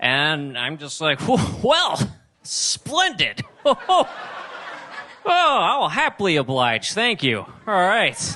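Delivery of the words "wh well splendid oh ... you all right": very high, way-too-polite dorky voice, acted out. Retelling own replies to a girlfriend's dirty talk: imitating own polite dorky voice. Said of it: "I just sound way too polite and dorky".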